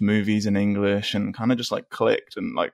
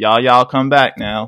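put-on rural farmer accent, said louder; 2 semitones higher, 7 dB louder than usual. Imagining the Terminator robot voiced in Arnold Schwarzenegger's rural hillbilly accent. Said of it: "this robot from the future kinda sounded like".

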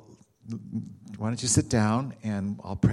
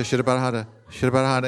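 rapid repetition, much faster; 3 semitones higher, 6 dB louder than usual. Retelling how he had a woman repeat a phrase faster, rapid repetition. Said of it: "Say it faster".

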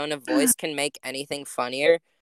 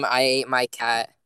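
ordinary talk

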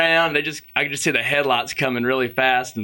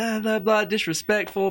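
high-pitched screaming in a babbling stream of gibberish; 9 semitones higher than usual. Retelling how some girls screamed at the speaker, imitating people screaming. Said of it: "they're just screaming at me".

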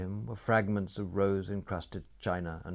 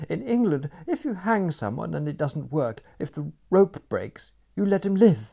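intense, out of breath, high-pitched and raised; 9 semitones higher, 8 dB louder than usual. A woman objects to two men: breathless. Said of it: "she said breathlessly".

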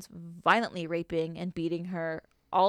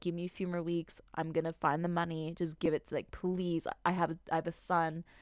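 mock pleading, much quieter; 5 dB quieter than usual. Retelling how a woman on her knees begged a man for mercy, retelling her begging. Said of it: "She begged him".

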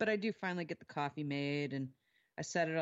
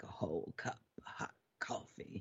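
whispered, mostly breath, hushed male voice; 8 semitones lower, 7 dB quieter than usual. Describing voices heard while being served coffee: imitating a whispery man's voice. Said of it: "really whispery man's voice is like".

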